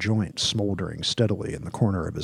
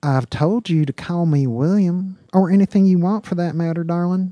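put-on drawling southern accent, very high and loud; 10 semitones higher, 7 dB louder than usual. Reading a story aloud, voicing a cowboy talking to a waitress, southern drawl. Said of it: "The cowboy's voice was drawled, like he came from somewhere down south".

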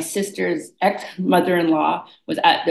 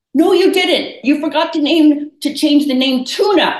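put-on Jamaican accent, pitched very high and loud; 10 semitones higher, 5 dB louder than usual. Retelling what a tall Jamaican woman said during a reading, Jamaican accent. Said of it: "And in her accent".

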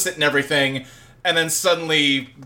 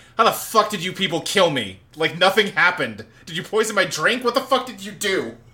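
put-on panicked, bewildered, frantic, disbelieving outburst; 3 semitones higher than usual. Retelling a character's reaction to seeing his own death: imitating someone freaking out. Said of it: "he just starts freaking out, like".

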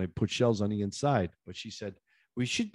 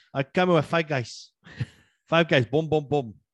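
put-on boastful voice, higher; 6 semitones higher than usual. Retelling what the painter said, imitating Paul. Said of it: "I just like imitating him".

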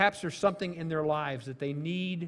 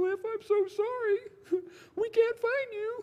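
tiny, very high, pleading little voice. Speaker recalling hearing their mother calling out for them, in a little voice. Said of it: "this little voice of my mother".

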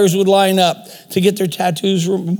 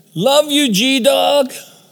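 full-throated, high, drawn-out scream; 6 semitones higher than usual. Retelling a man calling out from a window: imitating someone screaming. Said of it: "screaming at the top of his voice".

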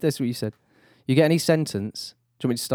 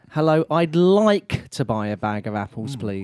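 polite-sounding, passive-aggressive tone. Trying out ways to ask for a bag of apples, passive aggressive. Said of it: "Passive aggressive".

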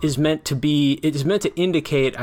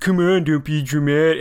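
taunting, mimicking tone; 3 dB louder than usual. Demonstrating how a woman taunts a man over his accent, mocking tone. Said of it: "she's like mocking him with her tone".

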